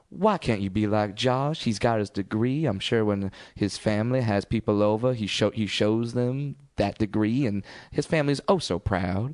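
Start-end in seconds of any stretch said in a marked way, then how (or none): 0.2-2.7 put-on Southern accent, done as impression. Speaker quotes their mom comparing them to Josh: imitating mom's Southern accent. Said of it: "Georgian uh, Southern accent's like".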